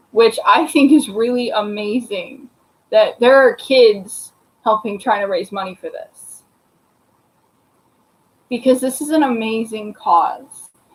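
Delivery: tearful voice, crying while talking. Describing a cause from a Facebook page, crying while talking. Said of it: "and I'm crying again".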